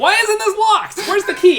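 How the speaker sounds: confused guard voice.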